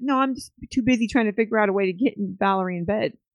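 ordinary talk, nothing marked

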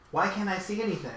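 put-on high young girl's voice. Voicing a girl a player hears in their head, in a young girl's voice. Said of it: "a young girl's voice in your head".

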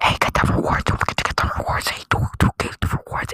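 very loud whisper right into the mic. Retelling how a manager whispered into the headset mic: imitating someone whispering. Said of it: "whispering in the mic".

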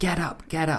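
acted anger, high-pitched, urging. Explaining the exclamation particle to another speaker: imitating angry urging. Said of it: "pretty angry or just like".

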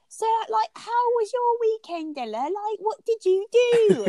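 very high, piping voice. Retelling how a woman talks: imitating her really high voice. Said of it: "She has a really high".

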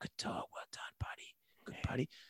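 hushed, low, soft little whisper. Showing dog owners how to praise a sitting dog, little low whisper. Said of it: "try something a bit lower, like a little whisper".

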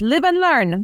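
put-on slightly high French accent. Quoting his late father's favorite saying, in a French accent. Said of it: "his saying in a French accent was".

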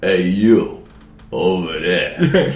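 cartoon New Yorker accent, laid on thick. Playing a cartoon New Yorker guy at a bar corner, exaggerated New York accent. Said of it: "This is like my cartoon New Yorker guy".

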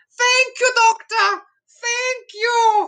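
very high, stately, drawn-out delivery. Imitating the Queen thanking the Doctor: Queen impression. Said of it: "that was my Queen impression".

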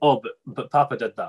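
ordinary delivery

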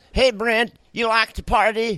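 animated character voice. A voice actor lists his roles and demos one: cartoon character voice. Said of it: "as Master Shake or Granny on Squidbillies".

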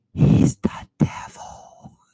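hushed, secretive, conspiratorial whisper. Retelling what a woman whispered about a coworker: imitating a whisper. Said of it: "and whispers".

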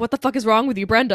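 ordinary talk

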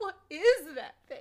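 put-on acted helpless pitiful girl voice. Mocking a CGI film scene, speaker plays the poor, pathetic girl. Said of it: "Let me be the poor, pathetic girl".

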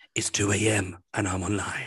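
put-on soft seductive voice. Comparing someone's silky voice to a TV show's announcer, mock-seductive Nightline voice. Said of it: "seductive voice?".

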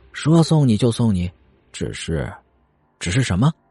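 plain reading voice

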